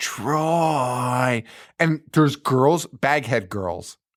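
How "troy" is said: creepy, eerie voice. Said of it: "it's fucking creepy".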